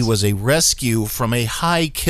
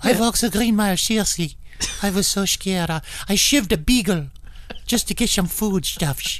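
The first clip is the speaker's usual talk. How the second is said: put-on German accent, pitched up; 8 semitones higher than usual. Acting out how Howard tells his story, in Howard's German accent. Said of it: "says it with a German accent".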